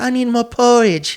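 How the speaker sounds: very high-pitched, pleading tone. Retelling a girl's plea, comparing her to Oliver Twist: Oliver Twist plea. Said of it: "Like Oliver Twist".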